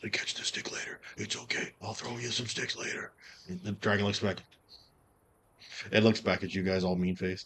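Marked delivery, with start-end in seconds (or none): 0.0-3.1 breathy, hushed theatrical stage whisper. A character leans down to speak to a little dragon, stage whisper. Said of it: "he's got to kind of like stage whisper to do it".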